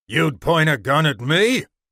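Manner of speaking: angry growled voice. A narrator reads a man's words to someone who shot at him, growling. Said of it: "the man's voice growled".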